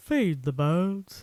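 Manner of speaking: put-on Cockney old lady voice, unmusical. Retelling how the old lady in the film says it: imitating a Cockney old lady. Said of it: "a Cockney homeless lady. And she just goes".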